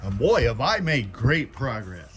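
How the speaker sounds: ironic, sarcastic delivery. Reporting an hour of work in the garage: sarcastic. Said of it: "That's said sarcastically".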